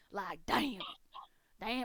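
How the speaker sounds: macho, manly cowboy accent. Demonstrating the accent that comes easy when asked to play a cowgirl, in a manly cowboy voice. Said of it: "I really just want to go manly cowboy".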